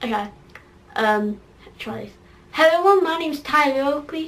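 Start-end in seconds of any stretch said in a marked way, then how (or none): 2.5-4.3 put-on American accent. Trying an American accent as Tyler Oakley: Tyler Oakley impression. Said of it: "Now get the American accent".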